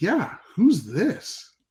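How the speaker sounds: put-on very high, swooping voice with slight attitude. Retelling answering a phone call from an unknown caller while sleeping: retelling a reply with attitude. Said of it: "little bit of attitude".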